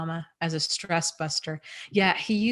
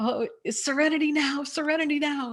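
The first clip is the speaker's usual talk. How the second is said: put-on scream, pitched higher; 9 semitones higher than usual. Retelling a TV episode where a father starts screaming: imitating someone screaming. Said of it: "he starts screaming".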